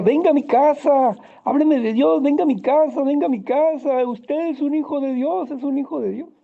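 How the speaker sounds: mock frenzied, very high, pleading, frantic shouting cries. Recounting a woman calling out to the nineteen-year-old speaker, imitating a frantic shout. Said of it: "frenéticamente empezó a gritar".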